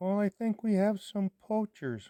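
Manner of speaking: thin, frail, tiny, very high voice. Retelling answering a phone call, the speaker voices the caller in a tiny frail voice. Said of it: "here's this this tiny little frail voice".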